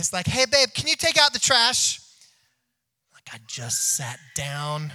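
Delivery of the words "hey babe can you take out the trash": very loud, high-pitched asking-a-favour tone. Retelling how a wife calls from the kitchen, imitating her different tone. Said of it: "It's a different tone".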